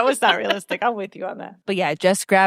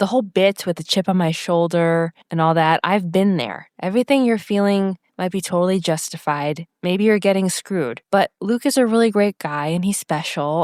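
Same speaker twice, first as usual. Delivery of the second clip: plain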